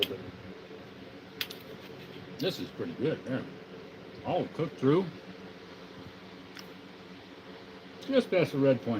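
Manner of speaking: hushed, breathy talk with mouth full. Tasting the food they just cooked, talking with mouth full. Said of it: "with your mouth full".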